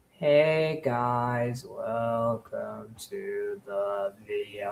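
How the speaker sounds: very soft, slow murmur. Show how a man you call a grifter sounds welcoming viewers, as The Quartering impression. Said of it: "but he sounds like this".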